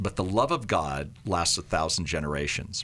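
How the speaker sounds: ordinary delivery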